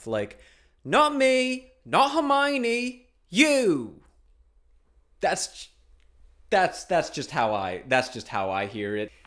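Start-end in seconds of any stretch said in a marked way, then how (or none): 0.8-4.0 very high, slow, drawn-out, forward-placed British accent. Explaining that British speech is more forward in the mouth: British accent. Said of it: "with a British accent, it's even more forward in the mouth".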